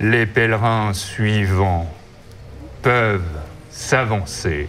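deep, resonating cavernous voice, broken up, halting. Narrating to players, voicing a voice that calls the pilgrims forward, cavernous voice. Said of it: "Vous entendez résonner une voix caverneuse".

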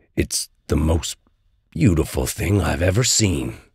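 ordinary delivery, nothing marked

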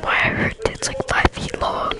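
soft, unvoiced whispering. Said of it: "I'm gonna whisper this".

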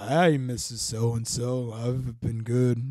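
acted sick-sounding voice. Retelling greeting a friend's mom at a bar while sick, retelling in his sick voice. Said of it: "sounding like this".

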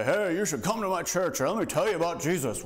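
cranky, grouchy tone. Demonstrating how not to invite someone to church, grumpy voice. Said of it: "we just go grumpy and say".

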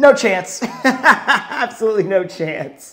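slow, high laughter through words.

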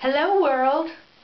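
high, dramatic, theatrical stage voice. Speaker starting a recording for the web, dramatic and theatrical. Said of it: "That sounded really weird and dramatic and very theatrical".

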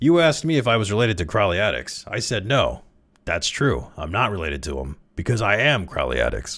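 usual speaking voice

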